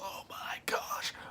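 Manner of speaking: mock scream breathed out in a whisper. Retelling being hurt while someone takes the bike: retelling own screaming. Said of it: "I'm just screaming".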